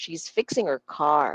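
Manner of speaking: heavy stress on fixing and on car. Repeat-after-me sentence, noticing the stressed words: stress on fixing and car. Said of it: "notice the words that I'm stressing, di ba? It's fixing and car".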